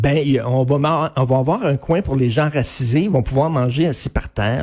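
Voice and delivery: ordinary delivery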